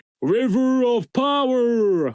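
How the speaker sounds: very high silly voice, power drawn out. Imitating the villain calling out his attack: imitating Metal Seedramon's silly voice. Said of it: "his trademark attack is he goes".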